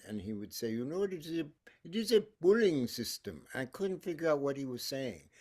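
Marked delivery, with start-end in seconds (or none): 0.7-3.4 put-on heavy Indian accent, laid on thick. Recalling sitar lessons and quoting the teacher, imitating Joseph's thick Indian accent. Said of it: "my teacher had a thick Indian accent".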